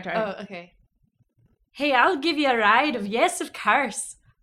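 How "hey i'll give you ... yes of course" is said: very loud, high put-on Irish accent. Retelling the st. patrick story, speaker voices the sailors: attempted irish accent. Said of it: "I can't do an Irish accent".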